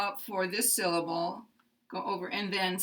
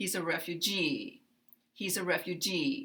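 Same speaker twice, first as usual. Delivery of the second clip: refugee: low start, rise, then glide down on stressed -gee; 4 dB quieter than usual. Demonstrating last-syllable stress, low, rising, gliding down on 'refugee'. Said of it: "come up here and glide down".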